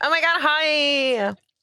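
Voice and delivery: gushing, bubbly voice, very high and slow. Mocking an overly bubbly greeting: imitating a bubbly greeting. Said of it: "She's very bubbly like that".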